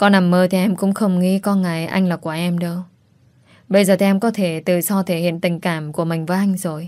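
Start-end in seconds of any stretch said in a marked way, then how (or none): none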